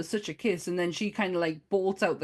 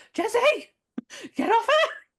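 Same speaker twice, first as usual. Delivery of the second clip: really high, squeaky, loud yell; 6 dB louder than usual. Recalling a man shouting in a scene, retelling a high-pitched shout. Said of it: "Really high pitched voice".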